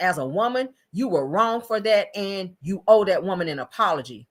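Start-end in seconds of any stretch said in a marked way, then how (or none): none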